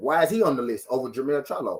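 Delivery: plain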